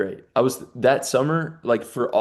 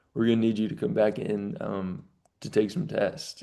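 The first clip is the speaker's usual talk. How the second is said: mock flat, lifeless, serious voice, lower, quieter; 3 semitones lower, 7 dB quieter than usual. Retelling a doctor's phone call, imitating his lifeless, serious voice. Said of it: "dude had like no life in his voice. Like he was like so serious".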